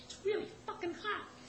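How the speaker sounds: squeaked out very high and soft. Retelling the performer's aside to the speaker, in a quiet Mickey Mouse voice. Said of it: "real quietly, but still in his Mickey voice".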